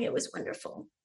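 whispered, very soft, tearful smiling delivery. Recalling being asked how it was, retelling smiling through tears. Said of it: "I smiled crying going".

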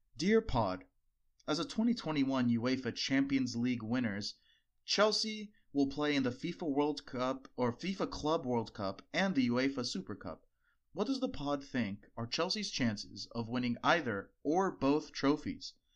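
mock-formal, proper reading voice. Podcast host reads a listener's tweeted question aloud, in a formal voice. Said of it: "so I have to read it in a formal voice".

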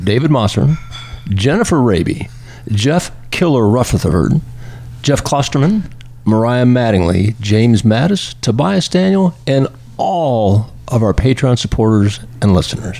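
sultry, seductive, low sexy voice. Reading the podcast's supporter thanks after being told to make it sexy, sexy voice. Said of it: "Make it sexy".

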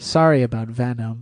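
very sincere, earnest delivery. Retelling a favorite movie line read: imitating Michelle Williams sincerely. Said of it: "very sincerely".

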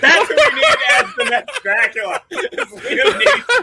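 talking through laughter.

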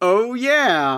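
silly, goofy, funny put-on voice. Acting out a character bursting through a wall: funny voice. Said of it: "in a funny voice".

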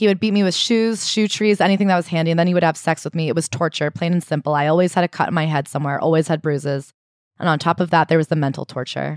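ordinary talk

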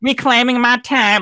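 poor put-on Southern accent. Imagining a committee member grilling someone, in a terrible Southern accent imitation. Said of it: "it's a terrible accent".

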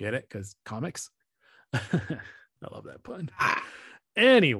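giggly speech broken by laughter. Speaker explains a pun to others on the call: laughing at own joke. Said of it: "I'm laughing at my own joke".

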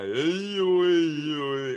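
loud, very slow, drawn-out calling out. Suggesting a line from Family Guy: Tony Danza speak. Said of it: "the Tony Danza speak on Family Guy".

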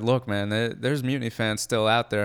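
ordinary delivery

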